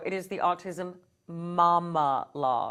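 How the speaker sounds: slow, low, measured, deliberate delivery word by word. Naming the show's title for listeners, said more slowly. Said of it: "I want to say it more slowly".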